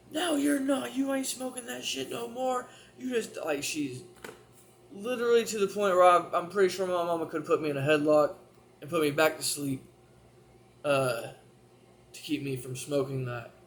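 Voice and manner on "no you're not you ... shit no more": very high-pitched, angry voice, losing control. Retelling his mom's reaction when he said he needed to smoke; imitating mom's angry outburst. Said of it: "My mom lost it".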